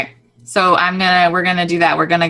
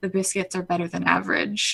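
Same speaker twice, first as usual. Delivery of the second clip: barely audible, very quiet, soft half-whisper; 10 dB quieter than usual. Playing a character who half-whispers a comment to a diner: half-whispering in character. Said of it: "whisper to him".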